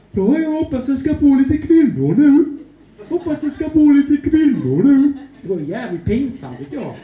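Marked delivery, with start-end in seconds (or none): 0.1-5.1 loud, high Värmland country dialect voice. Mocking a character he ran around playing, in Robert Gustafsson's Dalarna or Värmland dialect. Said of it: "eller värmländska".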